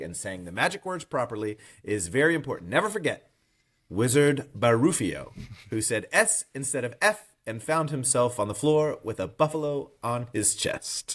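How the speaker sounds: ordinary talk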